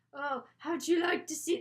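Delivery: put-on Scottish accent. Pitching a part 3 plot, the speaker voices what she says: scottish accent. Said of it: "That's my Scottish accent".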